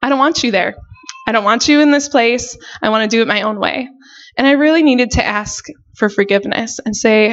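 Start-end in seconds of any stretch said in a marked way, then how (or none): none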